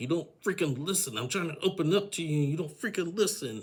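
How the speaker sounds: play-acted, high-pitched yelling. Retelling what Georgie yelled at Darcy: imitating someone yelling. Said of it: "he started yelling at her".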